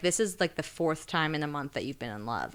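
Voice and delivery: ordinary talk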